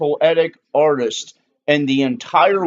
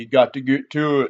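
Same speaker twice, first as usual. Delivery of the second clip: put-on colloquial, common-man way of speaking; 2 semitones lower than usual. Imitating his own way of talking in sermon videos: imitating his own colloquial sermon talk. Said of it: "And I don't ever talk like".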